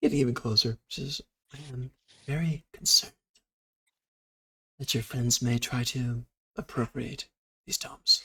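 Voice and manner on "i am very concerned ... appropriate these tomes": very soft, hushed whisper, slower. Narrator voicing a character stepping closer to the listener, very soft whisper. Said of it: "She's speaking very soft whisper now".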